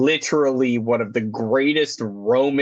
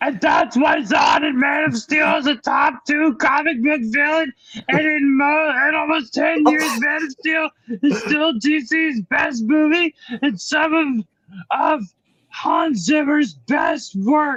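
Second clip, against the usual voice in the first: put-on very high-pitched, small, childlike puppet voice. Asked to go for it, show the others the voice you can do: Elmo voice. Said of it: "That's that's great, Elmo".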